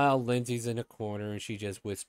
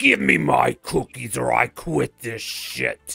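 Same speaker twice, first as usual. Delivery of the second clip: creaky, thundering, booming, rough dragon voice; 7 dB louder than usual. A narrator reading a rhyming story voices a dragon on the roof: booming dragon voice. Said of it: "A dragon's voice booms".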